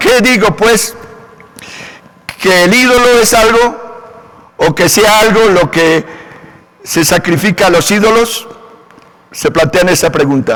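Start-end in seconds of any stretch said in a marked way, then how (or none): 0.0-1.0 put-on Colombian paisa accent, pitched up. Reading a bible verse aloud, repeating a phrase in a colombian paisa accent. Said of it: "Como con un acento paisa".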